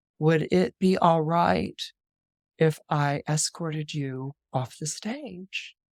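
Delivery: whispering. Retelling what she whispered in his ear after their performance, whispered in his ear. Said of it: "she whispers in his ear".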